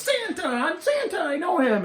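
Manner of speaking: very high, excited yell swooping up and down. Explaining a common error by imitating a movie scene: imitating Buddy the Elf yelling. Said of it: "He yells".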